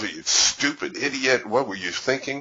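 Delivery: high-pitched, self-berating, cursing tone. Retelling a man overheard on an unmuted headset, imitating muttered self-cursing. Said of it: "he's he's cursing himself".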